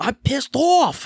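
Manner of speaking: put-on high, loud, belted Bronx accent. Recapping a pre-tape promo, quoting the wrestler: imitating Damian Priest's Bronx accent. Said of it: "Damian's Bronx accent coming out".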